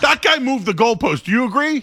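shouting. Arguing that a caller moved the goalposts: yelling. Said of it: "Why are you yelling at me for?".

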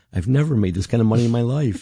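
acted bashful, sheepish, slightly high voice. Speaker recalls what a woman said after being paid, retelling a sheepish remark. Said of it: "she sort of sheepishly said".

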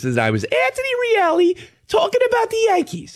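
put-on high, squeaky little-kid voice.

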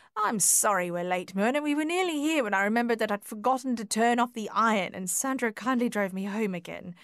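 ordinary delivery

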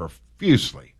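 heavy stress on "profusely". Recalling two-a-day practices in August, stressing PROFUSELY. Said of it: "Emphasis on the profusely".

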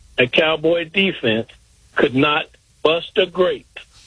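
really slow, deliberate delivery.

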